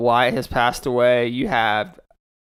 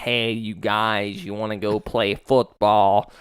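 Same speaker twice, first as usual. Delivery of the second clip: Northern-style twang mixed with Southern sounds; 3 semitones lower than usual. Showing how Alex talks, with Alex's Yankee-type twang. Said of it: "that's kind of how Alex talks right there".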